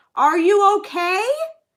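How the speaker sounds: loud, high-pitched, carrying voice. Retelling a lady speaking to an older man who can't hear well, retelling a very loud question. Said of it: "she's saying it very loud".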